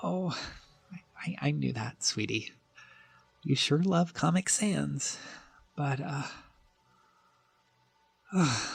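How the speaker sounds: tearful, soft, crying while talking. Carlos, overcome while looking at a certificate, answers the host, crying. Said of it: "Why are you crying?".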